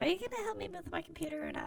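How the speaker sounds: put-on high little grandma voice. Playing a caller asking for computer help: Kit Boga grandma voice. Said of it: "He sounds like a little grandma".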